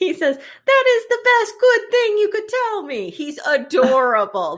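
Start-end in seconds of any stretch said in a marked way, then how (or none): 0.4-3.1 very high, put-on Italian accent. Retelling a show scene as the character Stanley: Italian accent. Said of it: "I'm gonna do it in Italian".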